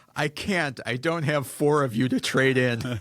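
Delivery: mock crying while laughing. A dad retells his daughter's reply after their game, imitating daughter crying and laughing. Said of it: "as she's crying and laughing".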